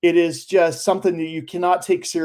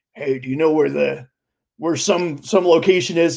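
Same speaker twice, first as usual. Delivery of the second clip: really low, deep put-on voice. Retelling a scene, voicing a person in drag, in a really low voice. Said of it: "this guy in a really low voice is like".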